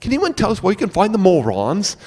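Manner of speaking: high, swooping, fake Australian accent. Retelling a friend asking around a mall in an Australian accent: imitating Mike's fake Australian accent. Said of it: "talking in an Australian accent".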